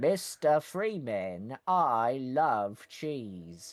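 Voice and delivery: slow, drawn-out voice with swooping, swinging pitch. Playing a game scientist as the cartoon character: Wallace voice. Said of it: "replace the Half-Life scientists with, uh, Wallace".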